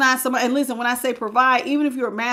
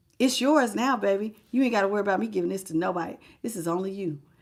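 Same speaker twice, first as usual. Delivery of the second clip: mock-generous, sarcastic put-on tone; 4 semitones lower, 6 dB quieter than usual. Acting out a person who acted like they were doing you a favor, mock-generous sarcastic retelling. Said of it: "I was being a little sarcastic".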